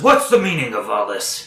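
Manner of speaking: swooping fat goblin character voice. Narrator voices a fat goblin behind the opened door, fat goblin voice. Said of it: "really fat goblin. Uh, he says".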